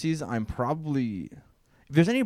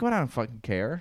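normal talking voice

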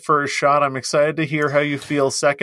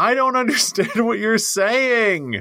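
high-pitched screaming voice; 8 semitones higher than usual. Retelling how a worker beside the car window reacted: imitating someone screaming. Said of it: "she screamed".

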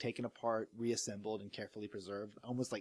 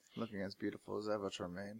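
quiet mumble, muttered under the breath; 2 semitones lower, 5 dB quieter than usual. Watching his mentor's hologram message, a character remarks, mumbling. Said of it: "He mumbles as he sips".

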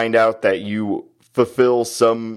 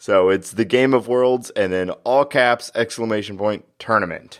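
normal talking voice

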